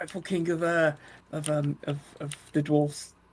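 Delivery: hushed half-whisper, close and intimate. Half-whispering into an announcer's ear during a grand entrance: half-whispering in character. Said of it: "I'm gonna whisper in his ear".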